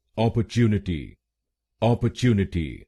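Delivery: opportunity in careful British English pronunciation.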